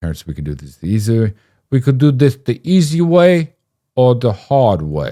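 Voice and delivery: put-on loud, swooping, terrible Italian accent. Retelling a childhood story, doing Ted Cruz doing an Italian voice. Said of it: "an impression of Ted Cruz doing an Italian".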